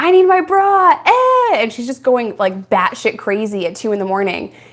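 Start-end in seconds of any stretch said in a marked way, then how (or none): 0.0-1.6 put-on very high, very slow drunken wailing scream. Retelling a drunk woman screaming at two in the morning, imitating someone screaming. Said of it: "she's screaming like".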